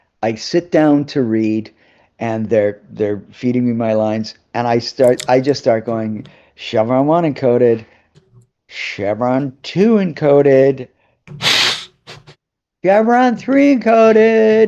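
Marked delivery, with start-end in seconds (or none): 6.6-14.7 hammy, over-the-top overdone reading, pitched up. Recalling reading lines being fed to them, over-the-top line delivery. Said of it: "putting all this like spin on all the chevrons".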